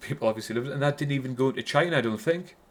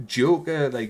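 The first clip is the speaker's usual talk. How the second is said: ordinary talk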